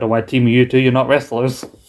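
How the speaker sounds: ordinary talk, nothing marked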